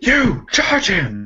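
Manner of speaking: high-pitched shouting voice. Voicing a jarl ordering two herdsmen to charge: shouting an order. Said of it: "y'all cough shouts".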